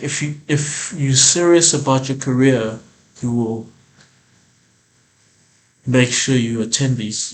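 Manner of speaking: earnest, grave, serious, no-nonsense. Retelling what the agency woman told them: imitating a serious warning. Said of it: "She makes it serious".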